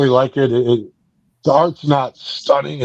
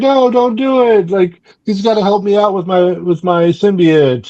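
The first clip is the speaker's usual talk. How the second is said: angry, protesting, pitched-up outburst; 7 semitones higher than usual. Retelling a comic scene where a character is mad: imitating someone angry. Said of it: "she's all mad. She's like".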